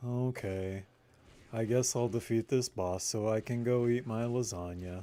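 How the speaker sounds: lazy-sounding ordinary speaking voice. Answering a viewer who asks for an impression: Garfield voice. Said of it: "Can you do a Garfield impression?".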